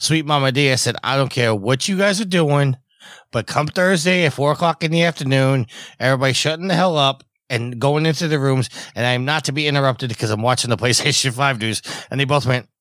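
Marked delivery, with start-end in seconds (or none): none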